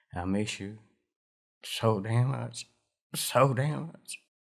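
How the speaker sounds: grieving, overcome, choked-up voice breaking with grief. A father speaks to his son during an interview, breaking down emotionally. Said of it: "I'm very breakdown right now".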